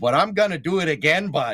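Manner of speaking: put-on fake Canadian accent. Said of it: "I'm gonna do the Canadian accent again".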